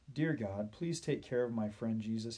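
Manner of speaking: ordinary delivery, nothing marked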